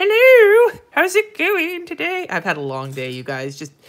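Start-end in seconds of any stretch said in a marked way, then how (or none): 0.0-2.3 shrill, very high, loud, booming, drawn-out tiny voice. Voicing a little paper clip greeting people: voicing a little paper clip. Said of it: "this little one that's like".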